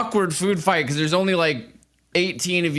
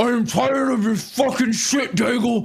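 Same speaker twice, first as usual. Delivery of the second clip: high, garbled talk through a mouthful of food; 6 semitones higher than usual. Game master voicing the person the player pointed at: Tyvor, mouth full of food. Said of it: "he's got his mouth full of food".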